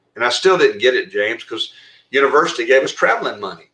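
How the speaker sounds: usual speaking voice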